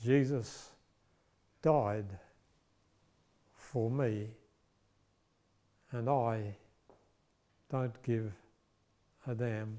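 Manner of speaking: slow, deliberate, halting, hushed words broken mid-phrase. Retelling a man's third time speaking before a statue of the crucified Christ: retelling slower words. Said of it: "This time his words are slower".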